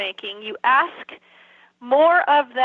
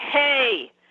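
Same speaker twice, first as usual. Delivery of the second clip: hey said as a dog-like growl. Showing how to correct a dog: growled "hey". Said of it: "I do it in a growl".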